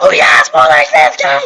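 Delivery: loud yelling. Correcting the impression to show they just yell: imitating Lanky Box yelling. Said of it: "just yell".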